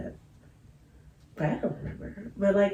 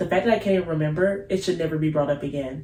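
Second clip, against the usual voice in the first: normal talking voice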